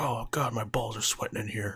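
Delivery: over-the-top, heavily overdone throaty voice. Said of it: "He's like".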